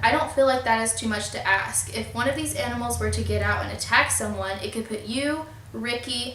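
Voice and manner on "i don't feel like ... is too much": ordinary delivery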